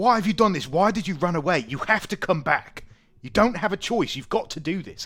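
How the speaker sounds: furious, very loud and very high angry tone. Voicing a brother who slams the table at his runaway sister: angry demanding. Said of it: "slams his, uh, hands onto the table".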